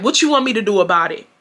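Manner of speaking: plain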